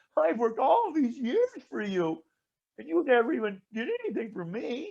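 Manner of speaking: acted, high, griping, put-upon complaining voice. Retelling the story, voicing the older brother's complaint to the father in a mock complaining tone. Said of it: "Here's my tone of voice".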